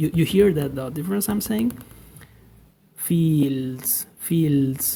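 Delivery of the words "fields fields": Spanish-accented pronunciation. Showing the Spanish way to say a word, Spanish-accented pronunciation. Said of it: "This is Spanish version".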